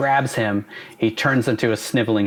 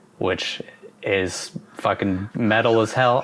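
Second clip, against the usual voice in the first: ordinary delivery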